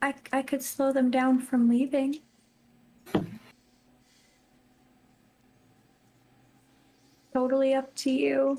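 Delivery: discreet, sidelong, private aside. Speaking in character after stepping away from the group: said really quietly. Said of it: "I'm gonna say this really quietly".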